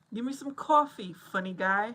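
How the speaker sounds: attempted New York accent. Trying out an accent for another speaker: attempted New York accent. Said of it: "did that sound like a New York?".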